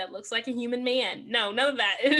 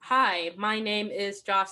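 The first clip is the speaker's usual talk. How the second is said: mock flat, robotic, monotone line reading; 3 semitones lower than usual. Complaining about a movie's actors, imitating their robotic line reading. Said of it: "like robotic".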